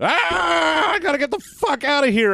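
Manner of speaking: panicked yelling.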